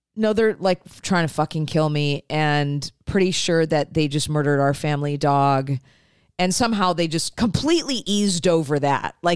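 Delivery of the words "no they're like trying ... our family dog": plain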